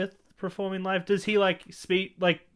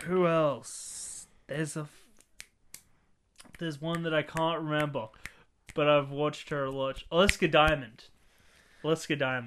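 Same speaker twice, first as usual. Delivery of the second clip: ordinary talk, nothing marked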